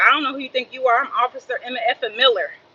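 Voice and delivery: ordinary talk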